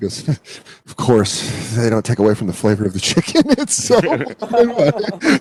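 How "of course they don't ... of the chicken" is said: leering, lusty, seedy purring voice. Retelling a man talking with a woman about cooking chicken: imitating a seedy, horny voice. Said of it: "such a seedy, horny voice for food".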